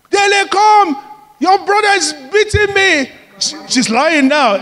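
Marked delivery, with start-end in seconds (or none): 0.1-3.1 high, loud shouting. Retelling a mother calling to her older son for help: imitating someone shouting. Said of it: "she's shouting".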